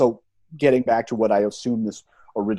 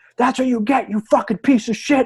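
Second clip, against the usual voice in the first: mock, furious, very high top-of-lungs scream; 14 semitones higher than usual. Recalling being a fan at an event, speaker reenacts his screaming; retelling top-of-lungs screaming. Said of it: "I was screaming at the top of my lungs".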